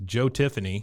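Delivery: normal talking voice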